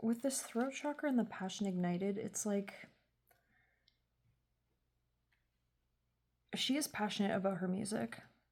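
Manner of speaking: soft, low-volume, hushed speech. Doing a tarot reading while her husband sleeps, speaking quietly. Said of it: "I'm sorry if I'm being like kind of quiet".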